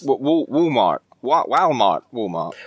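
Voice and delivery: bad put-on American accent. Mentioning listeners in America, a host tries a bad American accent. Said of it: "because of that accent".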